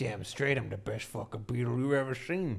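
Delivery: put-on dog character voice. A player voices their beetle character in a doggo voice. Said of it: "Is that your doggo voice?".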